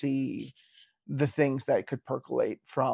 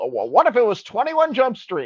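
put-on announcer voice, much higher, slower; 8 semitones higher, 4 dB louder than usual. Reading out the original prompt they were given, in a fake announcer voice. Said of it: "I do like my fake announcer voice".

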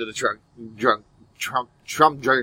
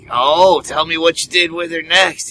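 put-on drunk creepy man voice, higher; 5 semitones higher than usual. Acting out a relative who urges someone to tell more: imitating a drunk creepy uncle. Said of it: "your drunk, creepy uncle, ... is like".

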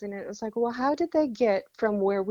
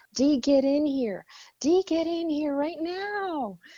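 high, urgent voice, stretching out "now"; 5 semitones higher than usual. Retelling calling someone into the bathroom: imitating own past yelling. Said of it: "And I started yelling".

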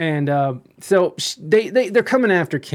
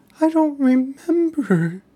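put-on teary, confused elderly woman voice. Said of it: "starts tearing up".

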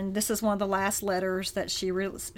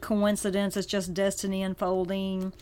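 usual speaking voice

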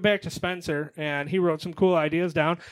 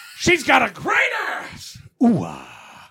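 loud, slow, stretched-out swooping delivery; 7 semitones higher, 7 dB louder than usual. Doing an impression for the others, announced as Al Pacino impression. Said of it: "Al Pacino".

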